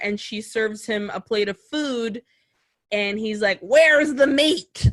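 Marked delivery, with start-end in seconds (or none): 3.6-4.9 put-on loud old-lady voice. Retelling a husband's demand for meat: imitating the Wendy's commercial old lady. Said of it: "Like the old lady from the Wendy's commercial".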